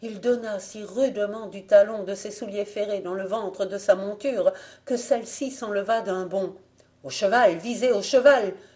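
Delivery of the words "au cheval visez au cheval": loud shouted delivery. As a rider spurs his horse away, another voice calls out, shouting. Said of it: "hurla une autre voix".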